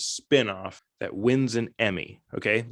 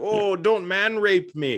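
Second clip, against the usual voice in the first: very slow, put-on mock Jamaican accent; 8 semitones higher than usual. Pitching a spoof show, voicing one of the lads: put-on Jamaican-sounding accent. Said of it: "Are you trying to be Jamaican?".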